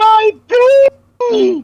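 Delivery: very high, loud, eerie ghostly wailing cry. A ghostly woman's voice wails through the shaking house: ghostly high-pitched wail. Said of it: "the ghostly, high pitched wail of a woman".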